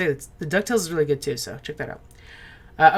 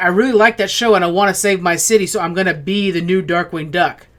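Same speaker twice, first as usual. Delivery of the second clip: ordinary talk, nothing marked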